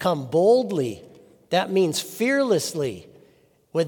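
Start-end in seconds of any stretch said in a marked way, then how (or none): 0.0-1.0 word boldly stressed, slow and loud.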